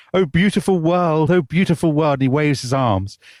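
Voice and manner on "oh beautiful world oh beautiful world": put-on loud calling shout, pitched up. Retelling how a prisoner on a platform with his warders sees a tree, imitating someone shouting. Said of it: "he shouts".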